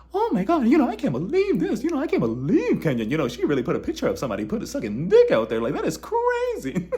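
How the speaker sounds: squeaky, high, sing-song cartoon voice. Imagining how Sheree would react to Kenya's picture, Sheree's Mickey Mouse voice. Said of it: "her and her Mickey Mouse voice".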